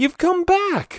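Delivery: thrilled, very high excited cry. Seeing Freddy come back outside, the narrator greets him, excited. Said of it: "I said excitedly".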